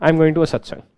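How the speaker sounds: firm, confident, assertive delivery. Modelling a mother announcing where she is going, confident, telling not asking. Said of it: "more confidence in the voice of mother ... she's not asking, she's telling now".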